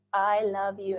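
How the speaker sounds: mock gushy, mushy fake voice. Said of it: "that gushy, mushy, that just feels fake".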